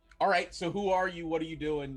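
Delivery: ordinary talk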